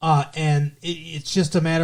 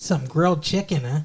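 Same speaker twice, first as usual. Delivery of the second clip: put-on mock Wisconsin accent. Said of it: "Ah, Wisconsin".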